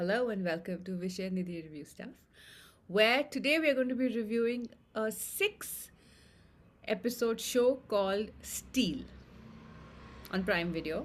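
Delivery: deliberately deepened host voice. Opening the review show after deciding to speak lower: deliberately deeper voice. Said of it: "I've decided to make my voice a little deeper".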